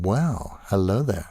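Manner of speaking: ordinary talk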